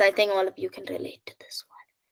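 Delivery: soft, fast, quiet whisper. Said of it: "the quiet voice".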